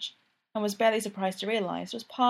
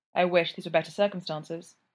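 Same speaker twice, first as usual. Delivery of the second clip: ordinary delivery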